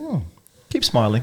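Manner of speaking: ordinary delivery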